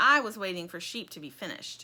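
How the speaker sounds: usual speaking voice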